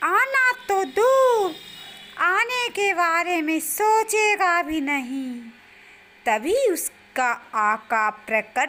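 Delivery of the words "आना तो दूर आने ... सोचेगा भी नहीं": piping, very high talking parrot voice. In a story, a caged parrot speaks to the hunter, talking parrot voice. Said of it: "और शिकारी के हाथ में एक पिंजरा आ जाता है जिसमें एक तोता रहता है। वह तोता बोलता है, / मेरे आका तुम्हें छोड़ेंगे नहीं।".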